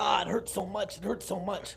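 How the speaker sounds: high-pitched, put-on cries of pain. Retelling a prank game, imitating own put-on pain cries. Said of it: "I'm playing the role like".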